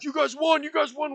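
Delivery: very high, very loud, shrill screaming. Retelling how a friend screamed in voice chat after the win: imitating Worm Cave screaming. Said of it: "started screaming. He's like".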